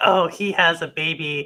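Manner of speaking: ordinary talk, nothing marked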